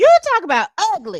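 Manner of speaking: high, loud, incredulous exclamation.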